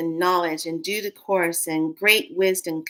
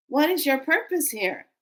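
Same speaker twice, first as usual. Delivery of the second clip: put-on higher grandmother voice; 8 semitones higher than usual. Retelling the grandmothers' question in their way of talking: imitating the grandmothers. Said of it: "like the grandmothers were saying in my ear".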